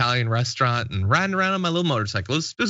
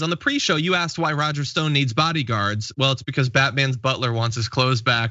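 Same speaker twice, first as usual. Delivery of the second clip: ordinary talk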